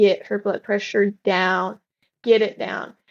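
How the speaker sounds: normal talking voice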